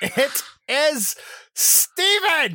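very high shout, wildly swinging and swooping. Narrating a game scene, the speaker voices someone calling from upstairs, yelling. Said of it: "I'm yelling it".

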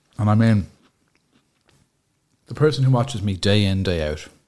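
talking with mouth full, chewing. Talking to viewers, talking with mouth full. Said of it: "my mouth is full That's of chocolate".

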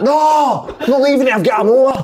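high, loud defiant shout.

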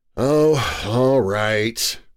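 weary, worn-out, tired, low voice. He finally gives in to her urging: weary. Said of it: "he said wearily".

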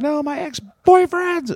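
frantic, shrill shrieking, very high and very loud. Retelling her reply as she kept protesting: imitating someone flipping out. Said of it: "flipping out".

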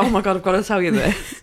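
plain

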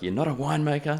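very high, loud, heated shouting. Retelling a fight over winemaking steps, retelling the other man's yell. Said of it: "he's yelling at me".

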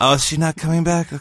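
dulcet voice with gentle sweetness. Acting out a movie scene squinting into the sun, dulcet Adam Sandler voice. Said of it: "say things in a dulcet voice like Adam Sandler does in the scene".

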